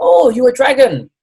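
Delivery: clumsy put-on Chinese accent, very high and loud. Retelling what a Chinese man said on looking at the speaker, bad Chinese accent impression. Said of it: "a really bad version of his accent and his voice".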